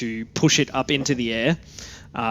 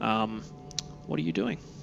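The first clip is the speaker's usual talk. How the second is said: ordinary talk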